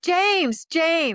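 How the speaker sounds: high, loud panicked yelling. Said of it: "she's yelling".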